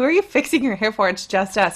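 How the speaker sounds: normal talking voice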